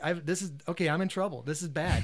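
plain

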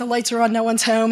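ordinary talk, nothing marked

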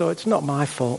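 soft, sorry-for-oneself tone. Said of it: "There'll be the self-pitying voice".

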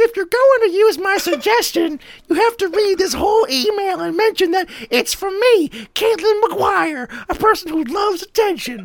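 very high-pitched put-on voice. Reading a friend's email aloud: imitating Caitlin's voice. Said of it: "I'm gonna use her voice".

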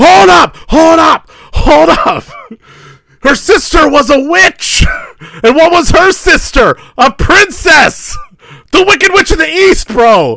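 shrieking, very high, loud screaming rant. Retelling a viral video of a guy arguing with a friend: imitating someone screaming. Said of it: "screaming at his friend".

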